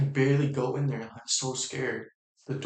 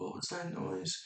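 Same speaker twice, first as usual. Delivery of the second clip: put-on groggy, creaky, high half-asleep voice; 5 semitones higher, 11 dB quieter than usual. Retelling mom coming out barely awake: imitating someone barely awake. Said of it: "barely awake".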